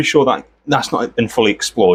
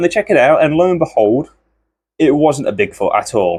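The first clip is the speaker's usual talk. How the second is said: usual speaking voice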